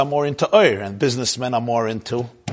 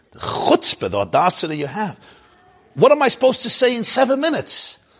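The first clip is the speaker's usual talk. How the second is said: scornful put-on sneer, very high and swooping; 10 semitones higher than usual. Telling a joke, voicing a professor answering the organizer: put-on disdain. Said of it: "So with disdain".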